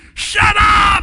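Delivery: very high, very loud scream at full lung power.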